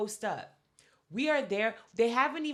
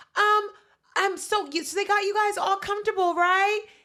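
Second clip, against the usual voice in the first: put-on very high, loud voice for talking to little kids; 11 semitones higher, 8 dB louder than usual. Retelling how a woman there came up to them: imitating Macy's preschool teacher voice. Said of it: "In a very, like, preschool teacher".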